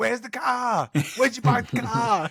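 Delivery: put-on high Boston accent. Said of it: "the most Boston thing that I've ever heard".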